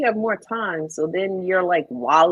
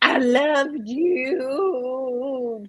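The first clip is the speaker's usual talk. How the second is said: mock drunk voice, higher; 4 semitones higher than usual. Acting out a drunk phone call to that person: pretending to be drunk. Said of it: "call that person in a drunk".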